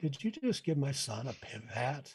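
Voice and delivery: bone-dry, deadpan, straight delivery with no laughter. Retelling what a kid's mom asked at the table, imitating a deadpan question. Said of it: "the kid's mom looks at me deadpan and says".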